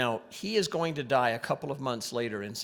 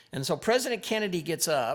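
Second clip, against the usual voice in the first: plain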